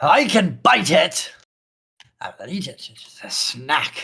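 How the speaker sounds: loud, hungry werewolf character voice. Narrating a game scene, speaking as werewolf number eight: werewolf voice. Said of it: "werewolf number eight goes".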